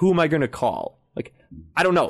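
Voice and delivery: acted snippy, dismissive voice. Speaker retelling a dispute over a confirmed flight, mimicking the woman being bitchy. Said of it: "she's being real bitchy".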